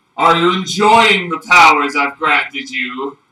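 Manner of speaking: booming, thunderous god voice. A powerful being addresses someone it granted powers to, in a booming thunderous voice. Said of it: "a booming voice ... thunderous voice".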